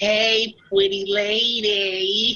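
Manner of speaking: high calling voice. Casting an illusion spell that mimics Kyle calling out: imitating Kyle's voice. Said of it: "I'm gonna ghost sound Kyle going".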